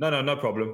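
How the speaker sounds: ordinary delivery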